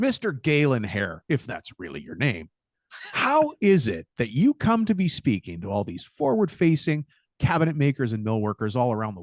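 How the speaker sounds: swooping, accusatory, grilling tone. Playing a TV-style questioner grilling the guest, in an accusatory tone. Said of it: "I'm going to ask this in an accusatory tone".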